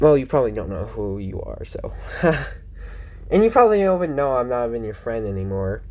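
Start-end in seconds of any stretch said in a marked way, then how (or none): 3.3-5.8 talking too fast, rattled off. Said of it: "I feel like I'm talking too fast".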